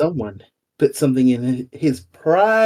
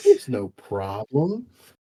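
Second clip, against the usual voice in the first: strange, odd, low put-on character voice; 5 semitones lower, 4 dB quieter than usual. Answering another player's complaint in character: odd character voice. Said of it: "Why do you talk like that?".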